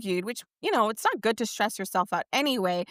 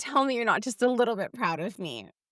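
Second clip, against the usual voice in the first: usual speaking voice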